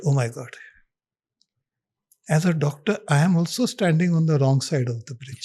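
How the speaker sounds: normal talking voice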